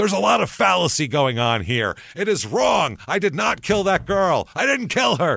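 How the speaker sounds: forceful, very high protesting tone. Recounting a man's words on the witness stand, the speaker re-enacts his raised voice. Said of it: "in a raised voice".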